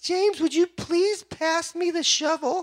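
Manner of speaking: very high, meek, feeble, wimpy little voice. Imitating an eighth grader's dad speaking to him at work, little wimpy voice. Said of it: "has a little wimpy voice".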